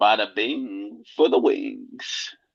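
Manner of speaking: put-on on-air radio announcer delivery. Speaker gets to use their radio voice, a put-on radio voice. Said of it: "I get to use my radio voice".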